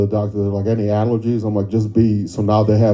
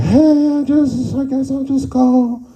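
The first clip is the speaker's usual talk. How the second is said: very high, drawn-out, lonely-sounding voice. Imitating a parent calling every once in a while: imitating mom's lonely voice. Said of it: "with that lonely voice".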